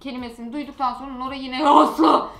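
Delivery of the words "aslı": normal voice, loud yell, like calling out from afar. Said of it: "ses tonuna geri dönüyor".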